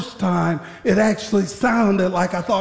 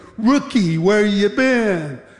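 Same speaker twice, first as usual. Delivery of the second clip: dry, needling, sarcastic tone. Retelling a senior guard questioning the returning rookie: imitating a sarcastic tone. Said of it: "he said sarcastically".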